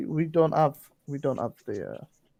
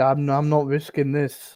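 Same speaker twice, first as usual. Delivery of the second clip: plain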